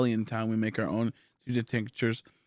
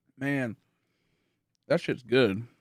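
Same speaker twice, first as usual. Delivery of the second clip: talking while chewing, mouth full; 2 semitones higher than usual. Eating popcorn during a long hunt, commenting on it: talking while chewing. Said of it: "Sorry for chewing".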